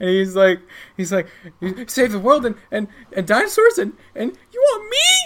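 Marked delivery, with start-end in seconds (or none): 1.6-5.3 very high, rising, excited put-on character voice. Voicing Ross, who gets really excited at the team's offer: excited Ross voice. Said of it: "he gets really excited".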